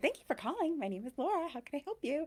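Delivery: polished phone voice. Showing her phone voice while telling about a call; polished customer-service phone voice. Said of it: "you know my phone voice".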